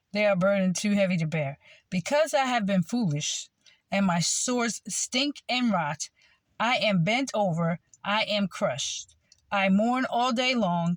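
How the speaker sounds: ordinary talk, nothing marked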